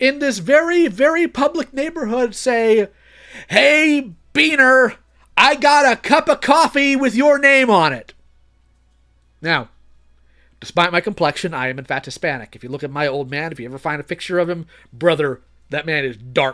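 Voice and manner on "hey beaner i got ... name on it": loud, high, drawn-out, top-of-the-lungs yell. Speaker retells a man yelling to him across the neighborhood: retelling a top-of-lungs shout. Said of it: "at the top of his lungs".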